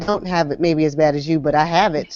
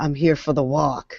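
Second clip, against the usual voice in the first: quiet, hushed stage whisper; 3 dB quieter than usual. Recalling tiptoeing up to registration at a first MS walk, retelling a half-whisper. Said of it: "I literally tiptoed and I'm whispering".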